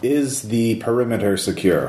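machine-like, automated, computerized robotic voice. An unknown caller on an office phone asks a question in a computerized voice. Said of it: "It's computerized voice".

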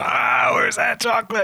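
very high, shrill, demanding yell. Retelling someone yelling at his secretary: imitating Mister Cornell yelling. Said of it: "yelling at his secretary".

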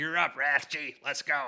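put-on hard-nosed, loud, angry old coach voice. Showing how a name sounds called out by a coach: imitating an angry old coach. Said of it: "saying that in an angry fashion".

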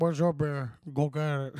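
put-on Cuban accent. Acting out what he would say in a shot-for-shot scene, in a cuban accent. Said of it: "I'm sorry for the Cuban accent".

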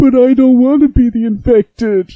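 put-on very high, plaintive child voice. Retelling what a young child said over the air, imitating a plaintive little kid. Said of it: "I heard this plaintive little voice".

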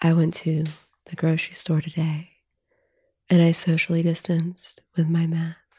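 low, slow sultry voice. Speaker demonstrates a phone sex voice on an everyday sentence, deeper, slower sexy voice. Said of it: "deeper, slower tone".

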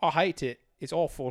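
poor fake British accent. Friends take turns trying accents on each other; a bad British accent. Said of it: "That was really bad".

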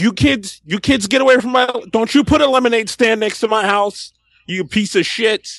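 put-on high-pitched old man holler, yelling. Joking about being a grumpy holdout, mock yelling at kids off the lawn. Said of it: "I'm still yelling from my lawn".

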